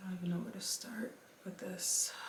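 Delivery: hushed, barely audible, breathy near-whisper.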